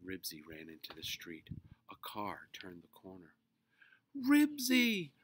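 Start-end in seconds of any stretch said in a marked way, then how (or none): 4.3-5.1 shrill, high, loud, terrified wail. A car turns the corner as the dog runs into the street; he wails, afraid. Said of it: "wailed Henry, afraid to look".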